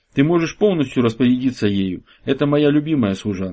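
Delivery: plain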